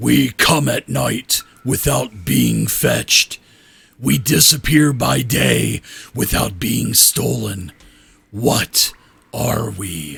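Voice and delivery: rough, creaky, echoing ancient dragon voice. Storyteller voicing a dragon statue speaking a riddle to the listeners, booming, echoing voice. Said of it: "this voice booms out and echoes".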